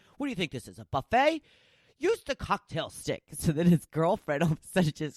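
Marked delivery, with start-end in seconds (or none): 0.2-3.2 put-on yelling, high and swooping. Retelling how a guy went to grab one of the samples, imitating Gordon Ramsay yelling at him. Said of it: "He yells at people, and he's like".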